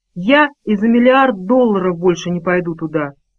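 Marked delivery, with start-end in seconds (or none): none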